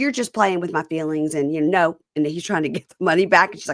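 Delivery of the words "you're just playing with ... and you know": usual speaking voice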